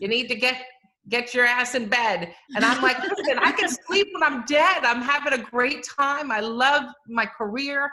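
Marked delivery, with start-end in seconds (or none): 0.0-2.3 put-on thick, strong New York accent. A speaker quotes their Bronx-born mom on the phone, imitating her hardcore New York accent. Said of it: "with her hardcore New York accent".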